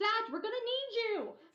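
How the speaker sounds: very high-pitched, urgent shouted yell. Playing a character who calls Zach urgently: yelling in character. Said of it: "why are you yelling?".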